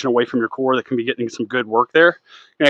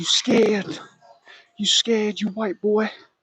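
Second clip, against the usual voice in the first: high-pitched, drawn-out mock screaming; 8 semitones higher, 6 dB quieter than usual. Retelling a quote while working out, imitating Mike Tyson screaming. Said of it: "that Mike Tyson quote where he's screaming".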